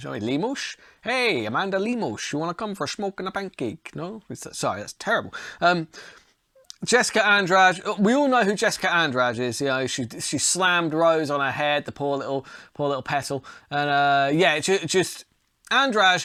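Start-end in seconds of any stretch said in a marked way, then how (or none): 0.2-3.9 bad, soft, fake Dutch accent. Speaker previewing the main event says a name in a mock Dutch accent. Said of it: "saying that like a Dutch person".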